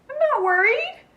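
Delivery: insistent voice pitched way up, very high. Narrator reading a story, Zuzu answers Bean's reassurance in a high voice. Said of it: "Zuzu said in a high voice".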